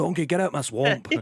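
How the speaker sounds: loud, high, shouted Scottish ogre voice. Showing the only Scottish accent available, a Shrek impression. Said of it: "like Shrek spectacular".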